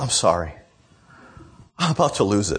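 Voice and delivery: soft-spoken, gentle, mild-mannered voice. Retelling a mom apologizing to the other ladies: imitating a soft-spoken, gentle mom. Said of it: "this very soft-spoken, gentle sort of thing".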